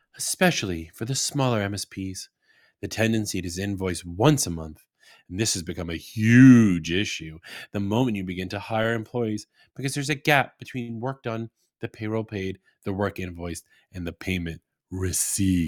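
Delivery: low, sultry, sexy, seductive voice. Host reads his business tip as if it were a sultry sex story; sultry seductive voice. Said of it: "I'm going to read this like as if it's a sultry sex story".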